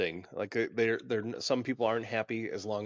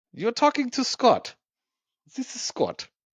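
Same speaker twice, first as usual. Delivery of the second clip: put-on German accent, very loud, high, shrill, blaring; 13 semitones higher, 8 dB louder than usual. Asked by the other speaker to say it in a German accent: German accent. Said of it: "Say it in German accent".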